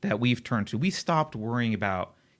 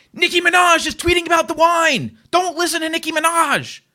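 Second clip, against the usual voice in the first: very loud, high-pitched, shrill, upset yelling; 10 dB louder than usual. Recounting an upset man yelling at them mid-conversation, imitating someone yelling. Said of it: "he's literally yelling at us".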